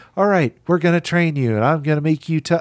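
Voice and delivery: mock lifeless, flat, emotionless monotone. Retelling a training scene from a movie: imitating a flat delivery. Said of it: "very flat".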